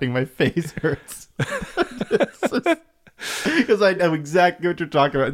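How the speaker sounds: very slow words broken up by high, swooping laughter. Reacting to another speaker's story, laughing while talking. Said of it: "I'm so sorry I'm laughing".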